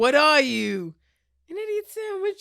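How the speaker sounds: very loud, high-pitched yell at full blast. Taking turns doing impressions from Hell's Kitchen: Hell's Kitchen impression. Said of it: "That was a good one".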